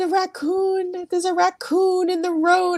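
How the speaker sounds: very high, tearful, sobbing crying voice. Retelling an early-morning conversation on the parkway, reenacting her own crying. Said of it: "and I'm crying".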